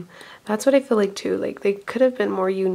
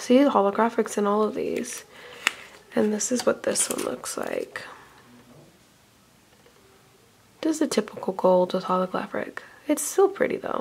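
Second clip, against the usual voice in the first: quiet, hushed, kept-down chatting; 3 dB quieter than usual. Host showing color swatches while family is over: talking quietly. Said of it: "Sorry if I'm talking quiet".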